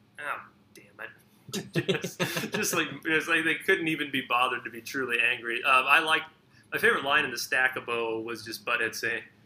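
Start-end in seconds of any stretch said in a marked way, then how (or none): 0.2-2.6 put-on whisper, much slower. Describing a scene, the speaker quotes Beavis: Beavis whisper. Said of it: "But Beavis just in a whisper".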